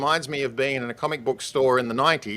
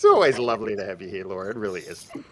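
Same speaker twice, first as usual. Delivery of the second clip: sounding sarcastic, unintentionally, lower; 5 semitones lower than usual. Welcoming a guest back to the show, sounding sarcastic. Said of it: "that came out more sarcastic than I meant to".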